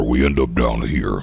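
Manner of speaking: voice sunk to the bottom of its range. Asked about lowering voice register, demonstrating with a deeper voice register. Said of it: "If I lower my voice register".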